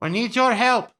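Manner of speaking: loud carrying call. Calling for help to a figure forty or fifty feet away, shouting from far away. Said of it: "You're basically have to yelling".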